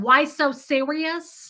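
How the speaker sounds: sudden put-on Brooklyn accent. Retelling a reply to a rude man at an airport: put-on Brooklyn accent. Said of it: "I switched it up to a Brooklyn accent".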